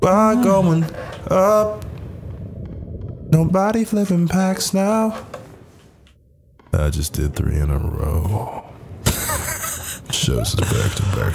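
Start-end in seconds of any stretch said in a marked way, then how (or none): 6.7-11.4 halting delivery with big dramatic pauses. Talking with friends about opening packs, say it with halting dramatic pauses. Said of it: "fucking William Shatner?".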